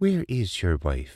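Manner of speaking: gentle, soft delivery. Maddie asks Thomas where his wife is, gentle question. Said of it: "she asked gently".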